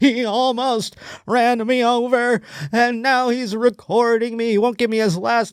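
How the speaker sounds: mock crying. Imitating the cyclist in the video who is basically crying: imitating a crying man. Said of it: "This guy is basically crying".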